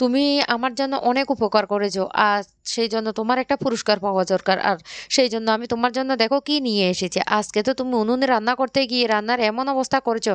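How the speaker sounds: usual speaking voice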